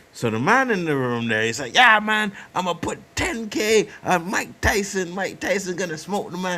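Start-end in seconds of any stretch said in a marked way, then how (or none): 1.7-6.5 put-on, pushy, aggressive, swaggering boastful tone. Retelling a man betting on a fight: imitating aggressive talk. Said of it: "he's saying it really fucking aggressive".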